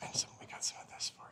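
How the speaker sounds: soft, unvoiced whisper.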